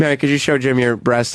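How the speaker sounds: plain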